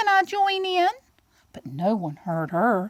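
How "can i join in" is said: tiny, very high-pitched storybook voice. Reading a farmyard story, voicing Quiet Lamb among the other animals: Quiet Lamb's little voice. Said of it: "said Quiet Lamb in her little voice".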